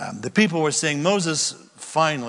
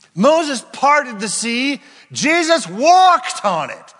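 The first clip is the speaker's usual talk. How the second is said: sudden, swooping, animated burst of a shout; 10 semitones higher, 8 dB louder than usual. Speaking to the room, comparing Jesus and Moses, shouting. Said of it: "Sorry for the shout".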